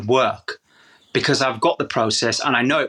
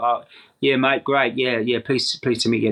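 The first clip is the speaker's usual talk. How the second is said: put-on uninterested actor voice. Retelling an actor's first greeting to his trainer: imitating uninterested Sam Worthington. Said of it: "Not interested".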